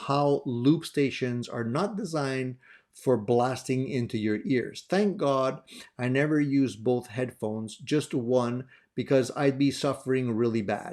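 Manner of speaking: normal talking voice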